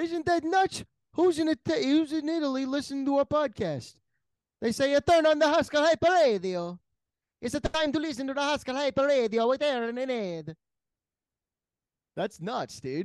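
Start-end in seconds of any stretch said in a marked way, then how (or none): 0.0-10.6 fake Italian accent with New York flavour. A podcast host imitates the show's Italian listeners, in a put-on Italian accent. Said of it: "Is that Italian?".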